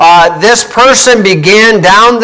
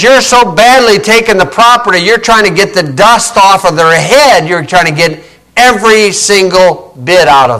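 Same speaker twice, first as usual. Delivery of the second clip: ordinary talk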